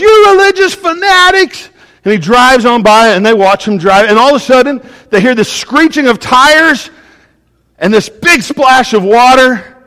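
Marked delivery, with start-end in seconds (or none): 0.0-1.7 very high-pitched, shrill shout. Telling a story, acting out a passing driver yelling at two preachers. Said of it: "the guy yells".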